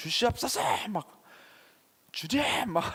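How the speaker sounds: high, bossy, demanding prayer tone. Describing how some people pray, the speaker imitates a commanding prayer. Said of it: "명령하듯이".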